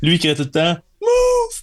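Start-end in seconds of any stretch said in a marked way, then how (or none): 1.0-1.6 very high, squeaky little yell. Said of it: "avec sa petite voix aiguë".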